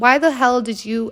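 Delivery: ordinary talk, nothing marked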